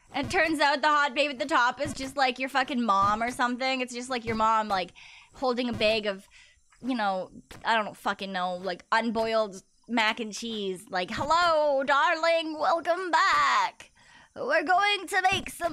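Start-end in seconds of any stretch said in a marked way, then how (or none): 11.2-15.8 put-on slow, sinister evil grandma voice, "back" stretched. Acting out the listener's mom greeting someone, in an evil grandma voice. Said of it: "your mom sounds like an evil grandma".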